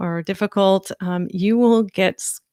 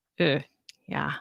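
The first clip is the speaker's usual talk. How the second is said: ordinary talk, nothing marked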